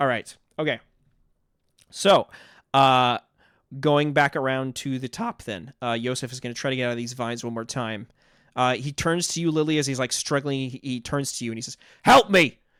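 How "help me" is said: very loud, curt bark, pitched up. Voicing a trapped character struggling in vines, barking at another: barking command. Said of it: "just barks at you".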